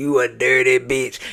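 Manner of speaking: put-on deep bass voice. Retelling what a cast member said in a quarrel: imitating a deep bass voice. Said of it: "with that bass in her voice".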